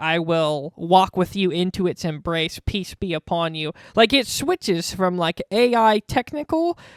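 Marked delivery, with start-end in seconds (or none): none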